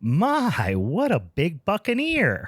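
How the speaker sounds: put-on high, sing-song little old lady voice. Telling a joke, voicing the old lady at the door: old lady voice. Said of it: "Old lady comes to the door. She says".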